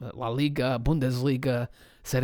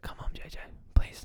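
soft, close whisper. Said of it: "I'm going to whisper to J J's ear".

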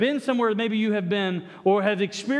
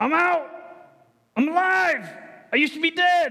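very slow, pitched-up, amateurish stagey proclaiming; 7 semitones higher than usual. Acting out Lazarus coming out of the tomb, playing Lazarus just raised. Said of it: "I know I can't act real well".

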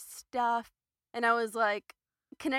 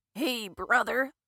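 loud, raised, belted-out friendly voice; 5 dB louder than usual. Retelling how a brother mocks a greeting: Hulk Hogan voice. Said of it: "like Hulk Hogan".

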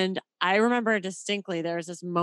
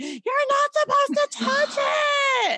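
put-on very high, drawn-out, child-like screaming; 4 dB louder than usual. Recalling catching the ball in first grade, then the other kids' reaction: imitating kids screaming. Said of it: "all the kids like started screaming at me".

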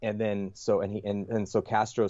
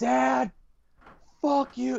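put-on very high, ragged, rough screaming outburst; 4 dB louder than usual. Telling about a Gulf War veteran losing it, imitating him screaming. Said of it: "he just starts screaming out".

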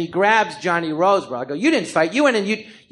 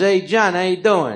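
talking like a mob guy, mafia-style. Retelling how an actor friend greets him: Paulie Herman mafia-style voice. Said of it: "he talks like he's in the mafia".

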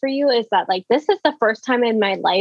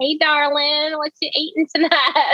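fake mock Southern accent; 6 semitones higher than usual. Speaker told to use a Southern accent at tables shows how it would sound: put-on Southern accent. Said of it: "full-blown [name]".

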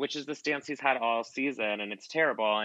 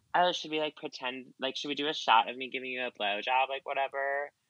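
mock playful, half-kidding, offhand joking tone; 2 semitones higher than usual. Speaker imagines how Sheena might have asked Brett, imitating Sheena joking. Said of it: "jokingly her be like".

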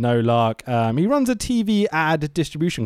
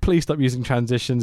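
usual speaking voice

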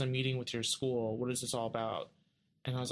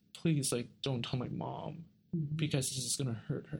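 put-on begging, pleading tone. Retelling begging a counselor not to tell the mother: retelling own begging. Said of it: "And I begged her and I begged her".

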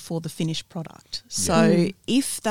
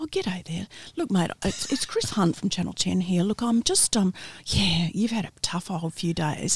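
gentle, polite, friendly, soothing phone voice. Retelling how a colleague switched to a polite phone voice when calling someone after a disaster. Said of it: "he'd go from being Oscar into Felix".

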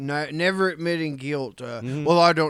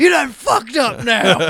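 very loud, high scream at full volume; 9 semitones higher, 10 dB louder than usual. Retelling a video of a tased man screaming at a cop: imitating someone screaming. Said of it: "he's still screaming".

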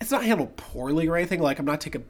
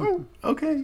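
adorable, sweet, very high voice; 12 semitones higher than usual. Retelling a film scene, imitating Sandra Bullock: adorable Sandra Bullock imitation. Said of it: "sounds adorable when she says it".

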